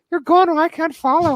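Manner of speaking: sudden, strange put-on Irish accent, very high. Quoting the line she said, in a weird irish accent. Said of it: "kind of had a weird Irish accent all of a sudden when she says that line. She's like".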